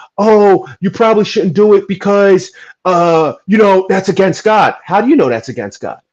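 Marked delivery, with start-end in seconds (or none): 0.2-4.8 mock screaming and shouting, high and raised voice. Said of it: "people screaming and shouting, going".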